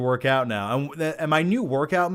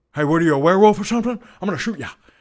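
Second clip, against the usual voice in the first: loud, raised, barking movie-actor voice; 3 semitones higher, 5 dB louder than usual. Reading a viewer question about a werewolf film, then doing a Gary Busey impression. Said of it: "that's my Gary Busey impression".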